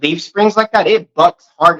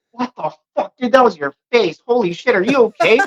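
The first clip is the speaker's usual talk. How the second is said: play-acted, high, panicked, freaked-out burst of alarm; 5 semitones higher than usual. Retelling a reaction after a passenger hit the windshield: retelling own freak-out. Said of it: "I freaked the fuck out".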